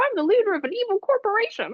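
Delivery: squeaky, high and swooping. Speaker recalls Bart in The Simpsons Movie doing a Mickey Mouse voice. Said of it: "pretending like he's Mickey Mouse".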